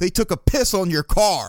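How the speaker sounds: called out, yelling across a distance. Retelling an older man yelling out to the car's owner: imitating someone yelling out. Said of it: "he yells out".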